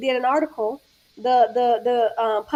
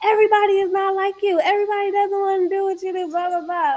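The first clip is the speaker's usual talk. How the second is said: loud, high-pitched yelling rant; 7 semitones higher than usual. Retelling what a sister said during an argument: imitating sister yelling. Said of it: "she started yelling at me".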